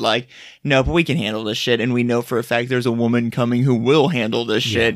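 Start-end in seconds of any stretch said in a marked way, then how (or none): none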